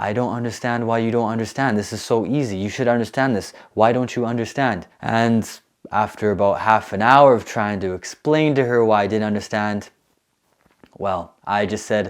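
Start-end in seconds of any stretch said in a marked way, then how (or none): 0.0-4.9 thick, heavy put-on Chinese accent. Retelling what a teacher's assistant kept saying: imitating a heavy Chinese accent. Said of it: "with her heavy Chinese accent".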